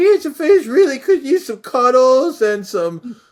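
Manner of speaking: very high, loud, squeaky character voice. Performing a character who evolved in the speaker, Cancer Face high-pitched voice. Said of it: "he kind of kind of had a high pitched voice".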